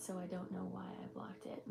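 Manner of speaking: hushed whisper under the breath.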